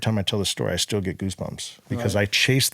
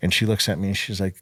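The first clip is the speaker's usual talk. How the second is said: usual speaking voice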